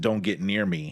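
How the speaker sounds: wild, really crazy, creepy and scary voice. Retelling what a screaming woman said as the pastor came closer: crazy, scary voice. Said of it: "said in this really crazy, scary voice".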